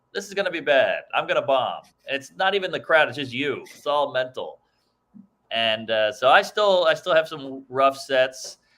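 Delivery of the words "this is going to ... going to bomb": usual speaking voice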